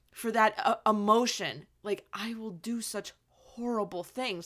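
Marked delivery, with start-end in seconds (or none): 2.2-4.5 put-on broken, emotional voice, quieter. Retelling a scene where he falls to his knees: imitating Anakin's broken voice. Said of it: "And his voice is so broken".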